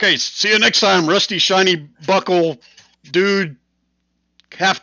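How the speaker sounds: shrill, booming, high, loud shout. Game master voicing the bartender as the players walk out, bartender shouting. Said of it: "the bartender will shout".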